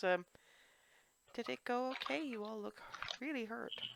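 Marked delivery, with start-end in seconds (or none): 1.3-3.8 tiny, high-pitched, soft voice. In a tabletop game, a player speaks as Shinaira in a tiny little voice. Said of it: "tiny little Shinaira voice".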